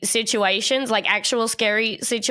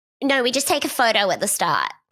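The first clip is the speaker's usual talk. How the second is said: put-on voice of a teenage girl, swooping. Retelling what the costumed haunted house worker said: teen girl voice. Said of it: "just in a girl teen's voice".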